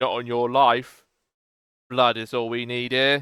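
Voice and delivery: gruff, harsh, rough put-on villain voice. Narrating a scene, voicing a figure who answers a plea for mercy, in a gruffer voice. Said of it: "another gruffer voice be like".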